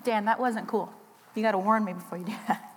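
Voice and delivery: crying while talking, tearful. Starting to share a testimony after an introduction, crying while talking. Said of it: "I'm crying already".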